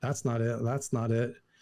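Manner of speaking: plain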